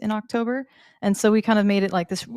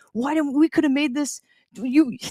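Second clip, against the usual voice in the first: genuinely upset, halting voice, higher pitch; 6 semitones higher than usual. Retelling how Will complained after being left out: Will impression. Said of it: "my Will impression's actually pretty spot on".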